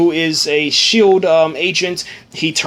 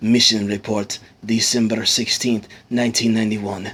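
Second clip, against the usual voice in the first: deep, very low, put-on Russian accent; 8 semitones lower, 4 dB quieter than usual. Retelling what a man said, the speaker does a russian accent. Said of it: "replicate the, you know, the the uh, Russian accent".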